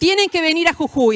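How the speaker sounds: commanding schoolteacher tone. Retelling a woman's phone call to the speaker, in a bossy teacher voice. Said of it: "Y con voz de maestra".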